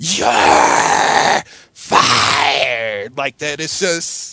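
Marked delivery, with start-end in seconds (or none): 0.0-3.2 big, badly overacted delivery. Quoting a famous two-word firing line: Vince McMahon impression. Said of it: "my impressions are really bad".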